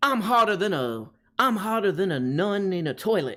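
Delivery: put-on odd Creole-style Louisiana accent, drawled. Trying out a Louisiana accent for the listeners, as a James Carville Louisiana accent. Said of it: "like his weird like uh Creole".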